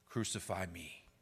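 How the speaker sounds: soft, hushed, barely audible half-whisper, very quiet. Voicing Jesus in a retold passion scene: half-whispering as Jesus. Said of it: "it is Jesus himself who whispers".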